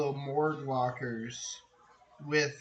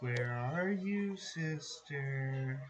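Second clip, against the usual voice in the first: echoing female voice, quieter; 4 dB quieter than usual. Voicing a voice that calls to a player character: echoing female voice. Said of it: "you hear a female voice echoing in your ear".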